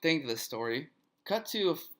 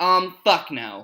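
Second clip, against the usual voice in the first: slow, loud, blunt, mock-rude tone. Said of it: "She goes".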